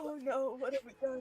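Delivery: put-on voice, pretending to hold back tears. Voicing an on-screen figure holding his head: mock fighting tears. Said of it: "fighting tears right now".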